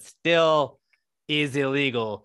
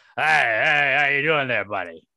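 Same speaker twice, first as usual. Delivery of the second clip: put-on drunk guy voice, louder and slower; 5 dB louder than usual. Show how Pete Rose always talks, in a Pete Rose voice, like a drunk guy. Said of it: "Pete Rose's voice is just like a drunk guy".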